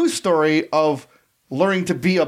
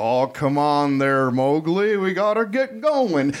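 put-on slow, unhurried stoned drawl, words dragged out. Imitating the voice of Baloo, the bear, like a stoned John Wayne. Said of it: "sounds uncannily like a stoned John Wayne".

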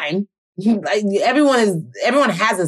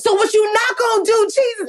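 put-on, very high, pissed-off furious yelling; 13 semitones higher than usual. Retelling yelling at Jesus on the street: imitating her own yelling at God. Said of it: "I was yelling".

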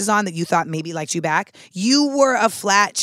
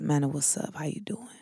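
low-key, real quiet, soft voice; 4 semitones lower, 11 dB quieter than usual. Retelling how a guy always greeted her, imitating him talking real quiet. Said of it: "just like real quiet like this".

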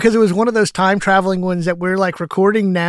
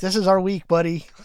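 plain

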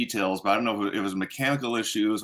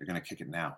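very soft, low mumble under the breath; 5 semitones lower, 11 dB quieter than usual. Telling a story, speaker quotes Peyton, retelling a soft mutter. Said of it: "Peyton softly mutters".

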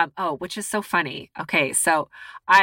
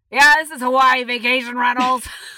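put-on elderly man's voice, pitched up; 6 semitones higher, 4 dB louder than usual. Retelling a phone call where an old man answers: imitating an old man. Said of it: "He's like".

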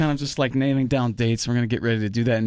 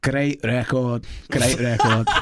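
put-on Liverpool accent. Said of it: "[name] Liverpool accent for this part".

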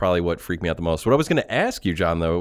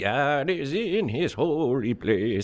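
put-on high, very slow old-man voice, each word drawn out; 7 semitones higher, 4 dB quieter than usual. Retelling a horror film scene, imitating Kane. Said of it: "he's like".

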